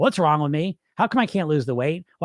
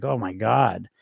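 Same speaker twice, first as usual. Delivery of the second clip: put-on very low, contemptuous, scornful inner voice; 7 semitones lower, 4 dB quieter than usual. Describing dieting, voicing the mean inner voice after a slip: imitating a scornful inner voice. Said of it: "that voice is like".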